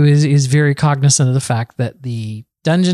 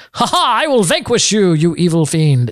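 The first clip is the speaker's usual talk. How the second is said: big, boisterous, heroic voice; 4 semitones higher than usual. A player showing how they voice their character, boisterous Grex voice. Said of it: "I do Grex as just a boisterous kind of voice".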